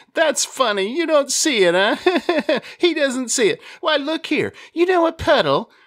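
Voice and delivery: very high, tickled, gleeful laughing disbelief. Narrator reads a laughing man replying to the narrator, gleeful, laughing. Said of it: "Yet he was an optimist. He was always gleeful and laughing. / [name] was a moon-faced man. You know the kind. Cheekbones wide apart, chin and forehead melting into the cheeks to complete the perfect r".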